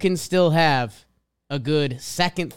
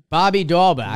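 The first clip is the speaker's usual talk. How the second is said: loud, put-on Boston accent; 5 dB louder than usual. Repeating the player's name after a listener mentions the accent: Boston accent. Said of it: "I'm not good with the Boston accent".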